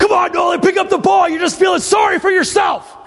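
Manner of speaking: put-on, very high, loud, screaming encouraging shout. Retelling how a woman urged him on during a ball throw; retelling an encouraging scream. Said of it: "in a screaming in my ear voice".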